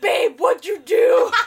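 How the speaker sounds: mock very loud, slow, drawn-out freaked-out outburst. Retelling a boyfriend's reaction on seeing his girlfriend at the door: mock freaked-out. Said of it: "freaks out at the sight of her".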